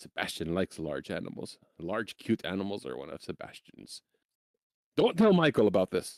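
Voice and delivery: low, secretive, confiding tone. After looking around, the character confides to a girl, in a hushed voice. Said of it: "kind of says in a hushed voice".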